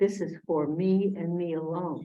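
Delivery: plain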